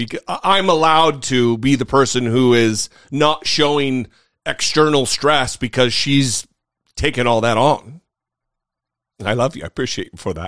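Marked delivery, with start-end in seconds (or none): 9.2-10.5 soft, quick laugh through emotion. Thanking the person who takes care of them, emotional and laughing. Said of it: "I got emotional and I'm laughing".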